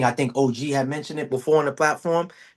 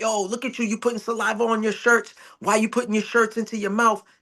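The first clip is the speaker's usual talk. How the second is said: mock scolding, high-pitched angry yell; 8 semitones higher than usual. Retelling how he yelled at the boy drooling on his shirts, retelling a yell. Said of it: "I'm yelling at him, screaming like".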